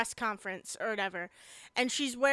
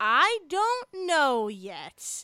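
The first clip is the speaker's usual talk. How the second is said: put-on stern tone, higher pitch; 3 semitones higher than usual. Retelling a character answering a reporter's question: imitating a stern reply. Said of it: "that stern moment where she's like".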